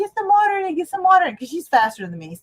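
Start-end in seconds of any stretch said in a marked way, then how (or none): 0.0-1.3 acted, shrill hysterical shriek, very high and loud. Retelling finding a drained fish tank, calling to her daughter: retelling her own scream. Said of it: "I started screaming".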